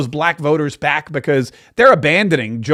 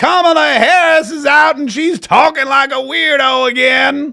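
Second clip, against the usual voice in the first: fake Southern accent, higher and louder; 10 semitones higher, 4 dB louder than usual. Showing how one might speak at a Southern live event: put-on Southern accent. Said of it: "another one where I speak like this".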